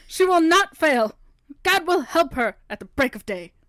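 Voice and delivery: loud, preaching revival evangelist preacher voice. Speaker declaring a line to a friend, in an evangelist preacher voice. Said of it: "You sound like one of those those pastors that get like the evangelists".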